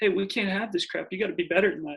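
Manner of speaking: ordinary talk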